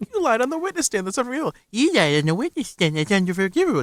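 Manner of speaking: high, derisive mock of a speaking manner. Mimicking how the person they're talking to sounds, mocking imitation of co-host. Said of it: "That's what you sound like".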